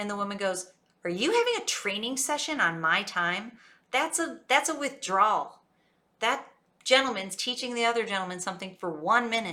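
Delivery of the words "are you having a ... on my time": snooty, stuck-up, snotty, swooping voice. Retelling what a woman said to two working men, mimicking a snotty voice. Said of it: "In a real, you know, snotty voice".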